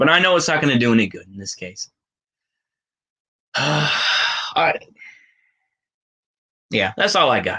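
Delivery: low, near-tearful voice, on the verge of crying. Closing out to the audience: on the verge of tears. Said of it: "I almost want to cry".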